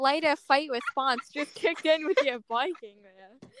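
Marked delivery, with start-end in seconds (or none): none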